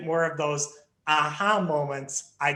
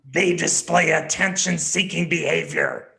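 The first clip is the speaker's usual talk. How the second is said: scary, spooky, menacing voice; 5 dB louder than usual. Reading the contrasting 'they' statements aloud, in a scary voice. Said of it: "read the they statements in a scary type of voice".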